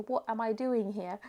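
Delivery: ordinary delivery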